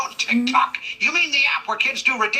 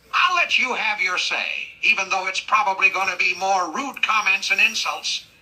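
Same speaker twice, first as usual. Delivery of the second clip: usual speaking voice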